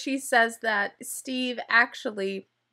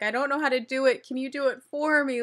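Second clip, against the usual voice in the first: put-on crying, tearful voice; 2 semitones higher than usual. Retelling how Danielle cried on the couch asking for help: imitating Danielle crying. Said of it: "crying on the couch saying".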